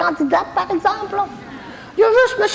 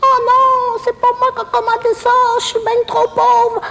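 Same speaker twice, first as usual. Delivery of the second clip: put-on pitiful little voice, pitched up. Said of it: "je prends ma petite voix pour faire pitié".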